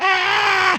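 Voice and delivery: mock screaming, very high pitched. Retelling a crowd at a monster truck show: imitating a crowd screaming. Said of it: "everybody's screaming".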